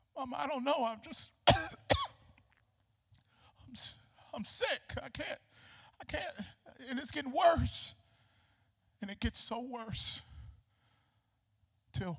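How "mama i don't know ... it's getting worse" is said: put-on breathless, faltering, stumbling, weak child voice. Acting out a sick boy telling his mother: imitating a sick boy struggling to breathe. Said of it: "there's no more breath in his body".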